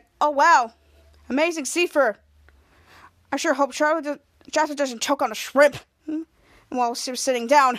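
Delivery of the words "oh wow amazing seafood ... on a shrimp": ordinary talk, nothing marked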